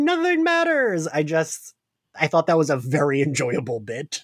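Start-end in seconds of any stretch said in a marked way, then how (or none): 0.0-1.1 screaming, much higher pitch. Speaker recapping a scene where Loki lets the goats out: imitating Loki screaming. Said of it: "He's screaming".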